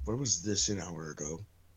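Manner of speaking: very low mumble, muttered under the breath. Muttering a complaint in character about a late helpful item: mumbling under breath. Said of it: "I mumble under my breath".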